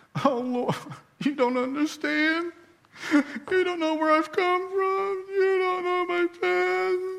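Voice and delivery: put-on very high, slow, drawn-out complaining whine. Picturing Gideon complaining to the Lord, imitating Gideon whining. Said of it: "I picture it this way with Gideon. ... I think he's whining to God".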